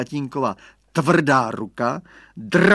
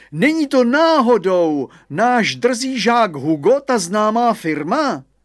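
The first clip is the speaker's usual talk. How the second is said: high, drawn-out exclamation; 8 semitones higher, 4 dB louder than usual. The headmaster calls out to the gardener about a pupil: exclaimed.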